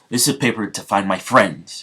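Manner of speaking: plain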